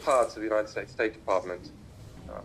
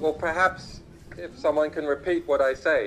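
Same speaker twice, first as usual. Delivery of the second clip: louder, raised voice pitched to carry. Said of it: "A little bit louder".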